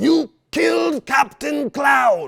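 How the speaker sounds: shrill, booming, drawn-out, high and loud villain voice. A father doing a cartoon voice his son asks for, in Joker voice. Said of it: "do the Joker voice".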